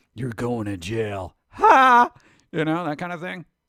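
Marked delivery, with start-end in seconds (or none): 0.2-2.1 loud, swooping, drawn-out, awkward laugh. Joking about how Batman might sound: Batman with an awkward laugh. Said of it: "a weird, awkward laugh where he's like".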